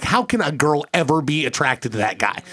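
ordinary delivery

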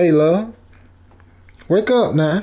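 loud, high call. Retelling trying to wake a woman who barely moved, speaking loudly. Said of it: "I spoke loudly".

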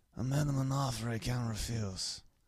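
quiet whispery movie-star impression. Asked to do an impression, try the line as a slightly whispered drunk Marlon Brando impression. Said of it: "just slightly whisper".

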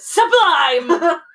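loud, high-pitched yell.

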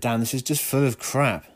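ordinary talk, nothing marked

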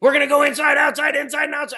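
shrill, very high screaming. Retelling grabbing the microphone at a banquet: imitating own past screaming. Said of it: "I screamed into the microphone".

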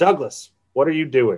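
ordinary talk

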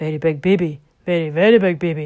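big, low, loud booming voice through laughter. A man teasing back the woman who called him a big baby, booming with laughter. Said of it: "he boomed with laughter".

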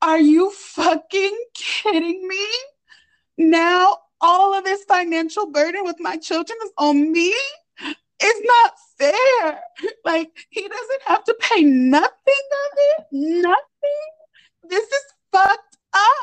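play-acted crying through every word, very high. Reading out what a woman said, imitating a woman crying. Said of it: "she's crying her eyes out, ugly face and everything".

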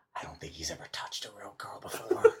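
quiet whisper. Making an in-character remark to another character: whispering to him. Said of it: "I'm gonna kinda whisper to him".

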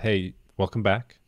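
normal talking voice

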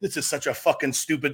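put-on angry, ranting, complaining tone. Retelling a player's complaint caught on camera near fans: imitating a player's angry rant. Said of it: "He's like".

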